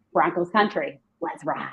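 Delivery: slow, deliberate, with stress on each word. Trying an impression everyone does on social media: Russell Wilson impression. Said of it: "I'm gonna see if I can do his impression".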